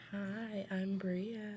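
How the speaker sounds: sweet, cute, very hushed, soft little voice. A guest introducing themselves on the podcast: cute soft voice. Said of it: "the cute little soft voice".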